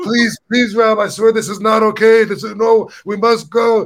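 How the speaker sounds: high, loud, frantic, terrified pleading voice. Retelling what he said as they walked through the door, imitating a terrified plea. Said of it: "He was like pissing his pants".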